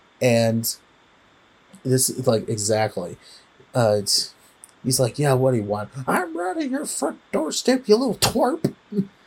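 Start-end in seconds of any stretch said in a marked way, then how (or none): 6.1-8.7 fast, high, swooping cowboy voice, rattled off. Retelling a movie scene where a character calls people up, in a Yosemite Sam voice. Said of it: "He talks pretty much like Yosemite Sam".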